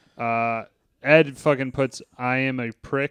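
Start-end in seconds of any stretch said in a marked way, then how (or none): none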